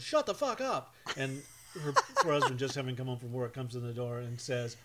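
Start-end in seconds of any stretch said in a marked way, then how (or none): 0.0-0.9 shrill, very high-pitched yell. Retelling watching a tv show together with a woman, retelling a yell. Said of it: "You yelled".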